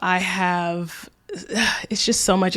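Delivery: soft, breathy, weary, drained sigh.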